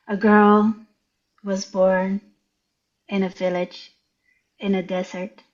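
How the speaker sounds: very slow, halting, pauses mid-phrase. Retelling reading a story aloud after being told to slow down: reading very slowly. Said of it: "Slow down, slower, much slower".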